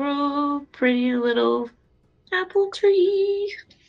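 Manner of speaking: whispered words. Playing a character who whispers to a little apple tree: whispering to a tree. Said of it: "whisper to it and say".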